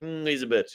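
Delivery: offhand dismissive put-down. Retelling what a friend always says about a player: imitating a friend's dismissive remark. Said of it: "he's just always like".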